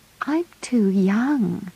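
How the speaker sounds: unsure, halting. [name] replies to John's question; hesitant.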